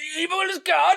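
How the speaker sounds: high, loud over-the-top shriek.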